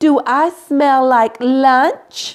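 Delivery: slow, sugary sweet, flirty voice. Storyteller reading a fable, voicing Madame Skunk in a sugarcane voice. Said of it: "asks in a sugarcane voice".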